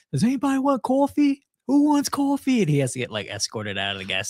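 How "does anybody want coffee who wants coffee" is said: put-on scream, higher and louder. Describing a video of a man in a gas station: imitating someone screaming.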